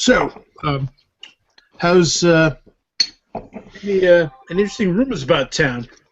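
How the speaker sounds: muffled full-mouth speech. Starving character eating while asking someone a question, talking with mouth full. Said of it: "speaking with my mouth full".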